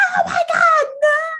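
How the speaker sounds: mock very high, very slow, stretched-out shriek. Retelling a cartoon scene where a captive cries out from a truck: imitating Muriel screaming. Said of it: "you just hear Muriel screaming".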